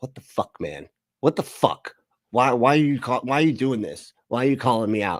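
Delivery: mad, heated, demanding angry outburst. Describing a man who is mad at being called out: imitating someone angry. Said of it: "you can see he's mad. He's like".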